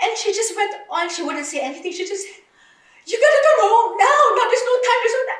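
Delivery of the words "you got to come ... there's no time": very loud, high, frantic screaming. Retelling what she told the speaker about coming home, imitating her screaming. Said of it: "She was screaming and screaming".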